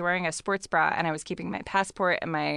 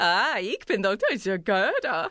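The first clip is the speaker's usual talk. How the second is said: mock German accent with gibberish, higher pitch; 3 semitones higher than usual. Retelling what a woman at the security gate said: fake german gibberish. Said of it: "I'm gonna do German gibberish".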